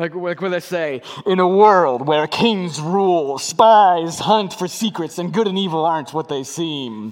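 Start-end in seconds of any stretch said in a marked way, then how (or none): 1.3-7.1 raised movie-trailer promo announcer voice. Speaker frames the story as a movie, in a movie promo voice. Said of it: "doing like a movie promo".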